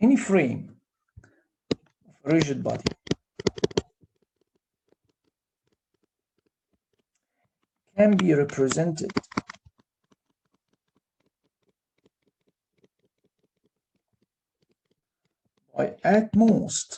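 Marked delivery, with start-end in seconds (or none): 16.4-17.0 heavy stress on "at most". Explaining Euler's hypothesis about a rigid body's frame: stress on 'at most'. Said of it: "again I'm stressing at most".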